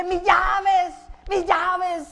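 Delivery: loud, drawn-out hollering and shouting. Acting out someone running late leaving in the morning, shouting. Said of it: "usted empieza a gritar".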